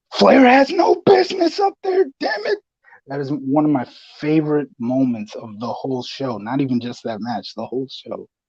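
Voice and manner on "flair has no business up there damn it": loud, very high-pitched yelling. Retelling a favorite match moment, imitating J R yelling out. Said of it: "he just yells out".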